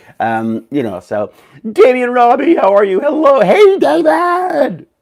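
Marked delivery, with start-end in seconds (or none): 3.0-4.8 very high, drawn-out morning-show shout. Greeting David in the morning after being asked how you are, with a morning shout. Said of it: "it's a morning shout".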